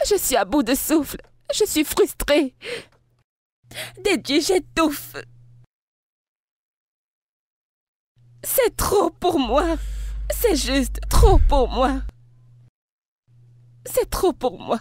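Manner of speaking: crying, in tears. Answering a partner who asks why you are crying: crying. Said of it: "Pourquoi tu pleures ?".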